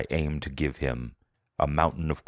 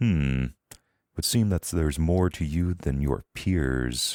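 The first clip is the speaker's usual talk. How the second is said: resonant, hallway-filling voice; 2 semitones higher than usual. Voicing a masked figure who grips a player's arm: deep voice filling the hallway. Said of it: "Its voice is deep, and it kind of fills the hallway".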